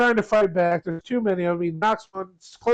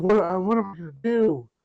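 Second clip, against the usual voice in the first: frantic, flustered, panicked voice. Retelling a scene where Seth asks what to do: imitating Seth freaking out. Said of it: "Seth starts freaking out".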